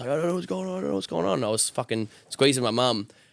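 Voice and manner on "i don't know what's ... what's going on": high, rushed, panicked sobbing babble. Retelling grabbing mum during a freak out: imitating own past panicked crying. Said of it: "fucking crying".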